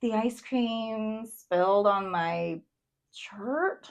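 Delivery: confused. In an emotion game, speaker reads a sentence with the drawn emotion: confused.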